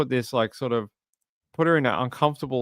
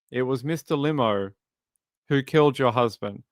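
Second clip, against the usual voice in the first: ordinary talk, nothing marked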